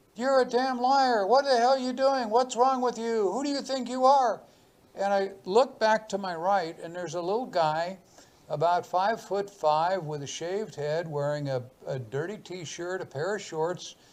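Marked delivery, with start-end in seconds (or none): 0.2-4.4 put-on, high, raised yell. Retelling how a stranger yelled in the speaker's ear: imitating someone yelling. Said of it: "a voice yelled in my ear".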